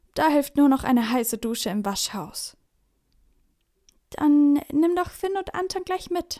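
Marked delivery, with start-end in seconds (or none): 4.1-6.4 meek, a touch sheepish, pitched up. Mom makes a suggestion to Papa, somewhat sheepish. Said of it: "schlägt Mama etwas kleinlaut vor".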